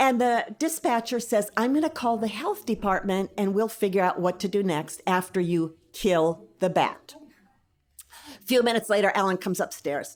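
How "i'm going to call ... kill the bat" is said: plain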